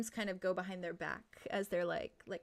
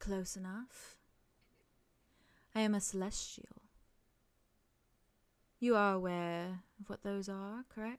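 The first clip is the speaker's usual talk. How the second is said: very gentle, soft, tender, kindly voice; 3 dB quieter than usual. A celestial being answers a question, speaking very gently. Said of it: "she very gently says".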